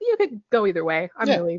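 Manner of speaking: plain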